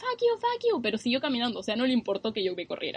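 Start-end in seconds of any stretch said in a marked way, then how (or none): 0.0-0.8 play-acted yelling, very high pitched. Recounting a guy who shouted after the speaker ran off: retelling a man yelling. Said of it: "el tipo como que me gritaba".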